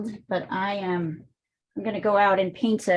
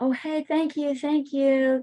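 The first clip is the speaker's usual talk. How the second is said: very calm, gentle, soothing voice, high pitch. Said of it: "very calmly said".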